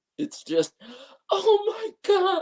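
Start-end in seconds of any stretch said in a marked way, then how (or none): 1.3-2.4 mock very high, loud scream of pure pain. Retelling how a guy screamed for help, imitating a pained scream. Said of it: "The next scream is just pure pain".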